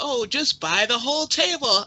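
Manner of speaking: playful teasing tone. Telling friends about a past moment, speaker retells a playful joke. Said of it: "When I say and joke".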